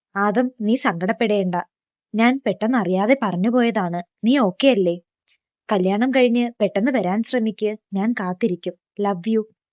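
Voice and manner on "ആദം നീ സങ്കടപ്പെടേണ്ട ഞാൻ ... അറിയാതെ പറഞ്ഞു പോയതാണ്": usual speaking voice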